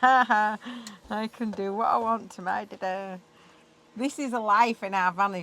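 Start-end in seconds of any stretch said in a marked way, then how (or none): 0.0-3.2 put-on smug, gloating, laughing dog voice. Voicing the dog who bites her dada: voicing the dog laughing at him. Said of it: "She's just laughing".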